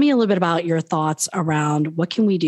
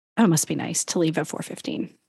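put-on muttering under the breath; 4 dB quieter than usual. A speaker recalls coworkers' remarks on leaving the office early, mimicking them under their breath. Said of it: "saying under their breath".

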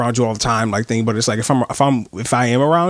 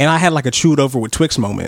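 ordinary talk, nothing marked

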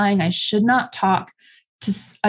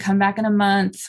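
plain

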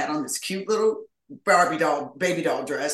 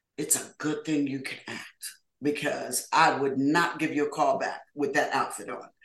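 ordinary delivery

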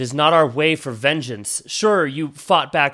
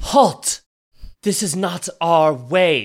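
put-on female character voice; 4 semitones higher than usual. Voicing a descending figure who orders the party to halt: female character voice. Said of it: "a female voice say".

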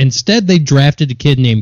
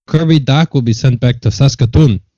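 put-on Canadian accent throughout. Asked to pronounce a town name, saying it in a Canadian accent. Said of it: "Say it with a Canadian accent".

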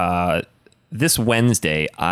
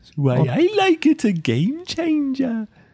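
very high, failed fake Indian accent. Trying an accent as someone from india: bad indian accent. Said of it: "That was not Indian".

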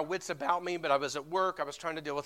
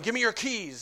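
put-on demanding angry yelling, much higher; 5 semitones higher than usual. Recounting a man who kept yelling at the speaker, retelling an angry yell. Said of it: "he just kept yelling".

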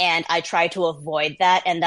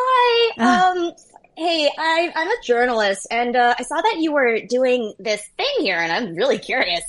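high, swooping voice creeping ever upward; 7 semitones higher than usual. Retelling approaching Proud Boys as a journalist, in a high-pitched voice. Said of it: "the higher and higher and higher my voice pitch went up".

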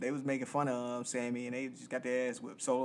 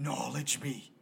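heavy rasp in voice. Imitating a man who put extra rasp in his voice, raspy voice. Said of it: "he put this extra, like, rasp in his voice".

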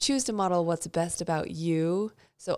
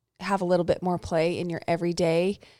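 usual speaking voice

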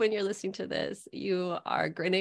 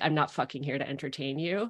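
deadpan put-on delivery, lower pitch; 6 semitones lower, 4 dB quieter than usual. Retelling a writing-room story from an autobiography: deadpan Amy Poehler imitation. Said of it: "Amy Poehler deadpanned and was like".

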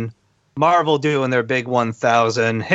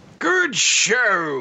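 full, robust, high voice, show drawn out; 8 semitones higher than usual. Trying out the voice another speaker just described, robust voice. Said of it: "Like that?".

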